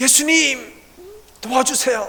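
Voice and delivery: high, desperate cry in terror.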